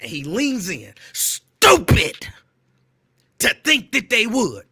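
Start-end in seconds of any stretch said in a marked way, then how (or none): 1.1-4.5 loud, angry, growling, half-screamed yell. Retelling a man who leans into his face and ear: Rickey Smiley mock-angry voice. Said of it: "this is my Ricky Smiley angry voice".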